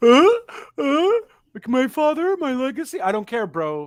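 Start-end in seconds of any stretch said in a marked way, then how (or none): 0.0-3.0 mock crying whine, very high, very slow, loud. Mocking a wrestler's emotional promo: mock crying Cody Rhodes impression. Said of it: "this whole "I'm crying" promo".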